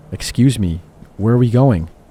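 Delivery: ordinary delivery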